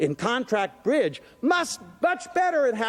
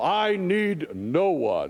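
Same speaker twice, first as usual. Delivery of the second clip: fake, deep, very slow put-on voice; 4 semitones lower than usual. Acting out someone who prides himself on standing alone, in a put-on deep voice. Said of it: "(In a deep voice)".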